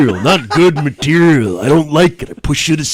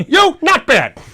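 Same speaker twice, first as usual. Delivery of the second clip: imitated gruff tough-guy voice, pitched higher; 13 semitones higher than usual. Doing a movie-line impression from They Live: Roddy Piper impression. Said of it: "I can only do Roddy Piper from They Live".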